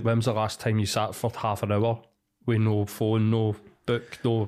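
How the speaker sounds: plain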